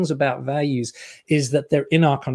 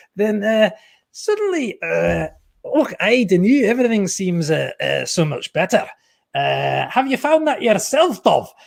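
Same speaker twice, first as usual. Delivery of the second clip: very bad, clumsy Glaswegian accent, pitched up; 6 semitones higher than usual. Asking the other speaker a question, trying out a bad Glaswegian accent. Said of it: "sorry, that was a very bad accent".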